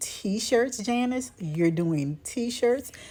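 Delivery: mock belittling disbelief, heavily sarcastic and scoffing. Retelling what a bishop once said about her t-shirts: imitating a sarcastic remark.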